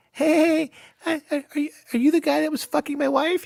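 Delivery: put-on very high squeaky kid voice. Describing kids turned away from VR chat bars, squeaky little kid voice. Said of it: "the little squeaker going".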